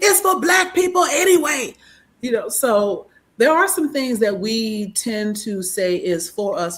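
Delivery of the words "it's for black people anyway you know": put-on voice, pitched very high. Asking everyone to weigh in, in the voice of Kev: Kev impression. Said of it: "in the voice of uh, uh, Kev on stage?".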